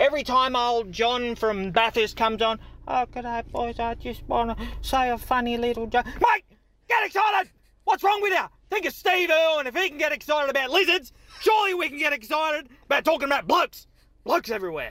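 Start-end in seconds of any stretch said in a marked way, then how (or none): 2.9-6.0 listless, low-energy, flat, unexcited voice. Mocking a quiet caller who phones in a joke: imitating quiet caller John. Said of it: "All these quiet callers".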